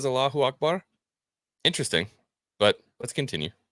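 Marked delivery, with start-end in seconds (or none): 0.1-0.8 put-on Middle Eastern accent, pitched up. Retelling what a woman on screen says: imitating a Middle Eastern accent. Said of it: "the Middle Eastern accent when she says".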